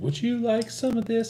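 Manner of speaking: put-on cute, high little-girl voice. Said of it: "they were like".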